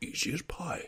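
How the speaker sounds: hushed, near-whispered, breathed out. Repeating the catchphrase when another speaker asks about it: Daddy Pig impression. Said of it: "That was a good impression".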